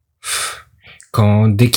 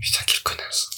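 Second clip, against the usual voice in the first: soft, voiceless, under-the-breath whisper. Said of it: "Ça, il a pensé dans sa tête".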